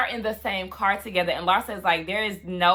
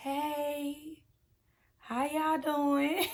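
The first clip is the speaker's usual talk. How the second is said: awkward, slow, high voice with "hey" stretched out; 7 semitones higher, 8 dB quieter than usual. Retelling a reality show moment where Lisa greets people: imitating Lisa's awkward greeting. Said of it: "she was so awkward".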